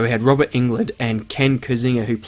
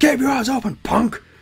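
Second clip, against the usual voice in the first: very high, threatening villain voice; 13 semitones higher than usual. A dad walking away after a photo, in his Freddy Krueger voice. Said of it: "in his Freddy voice".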